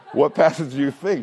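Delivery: sarcastic tone with a laugh.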